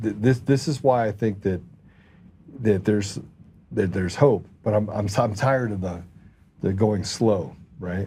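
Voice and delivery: ordinary talk, nothing marked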